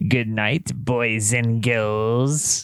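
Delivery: put-on low spooky horror-host voice, "girls" drawn out. Ending the show in character, one host signs off in a Crypt Keeper voice. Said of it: "your line as the crypt keeper".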